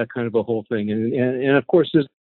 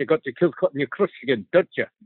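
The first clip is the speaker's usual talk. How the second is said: Scottish accent impression; 3 dB quieter than usual. Quoting a second remembered line, in a Pete McTaggart Scottish accent. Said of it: "much better than Amy's attempt at a Scottish accent".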